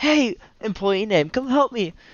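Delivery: very high, loud, flamboyant shout.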